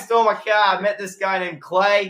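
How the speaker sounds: high, put-on Boston accent, laid on thick. Playing a character in a back-and-forth bit, in a boston accent. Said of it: "Boston accent".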